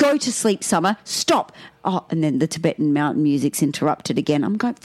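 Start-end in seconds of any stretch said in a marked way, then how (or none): 0.0-1.5 loud shout. Retelling a partner shouting at a child to go to sleep: imitating a partner shouting. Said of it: "Dan shouting out to the kids".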